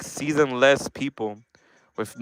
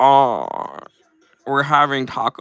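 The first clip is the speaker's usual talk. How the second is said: grating, deliberately annoying put-on LA girl voice. Showing off the voice he practiced for an hour after a video: annoying LA girl voice. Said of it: "I literally practiced that voice".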